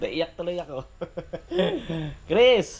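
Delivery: high-pitched, teary laughing.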